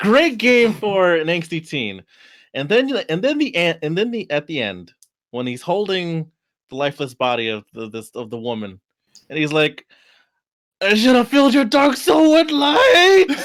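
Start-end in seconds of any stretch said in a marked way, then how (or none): 10.8-13.3 raised voice breaking on very high notes. Retelling a game hero's line over a lifeless body: imitating a voice-cracking line. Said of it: "the voice cracking of the voice actor in that".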